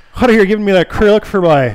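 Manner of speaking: poorly done put-on Newfoundland accent. Recruiting scripters, the speaker imagines a Halifax listener's reply, bad Newfie accent. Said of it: "was a really bad Newfie".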